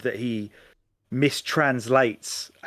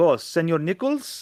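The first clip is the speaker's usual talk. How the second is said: put-on higher Italian accent; 6 semitones higher than usual. Summarizing a plot, voicing a character who interrupts Nichols, in Nunzio Pasqua's Italian accent. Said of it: "in an Italian accent".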